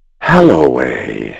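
low, husky, witch-like voice. A narrator reads the witch calling out a name: husky witch voice. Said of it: "husked the witch's voice".

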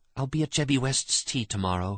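soft, hushed half-whisper under the breath. While dancing, she answers a man urgently asking to see her alone: half-whispered. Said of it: "she whispered".

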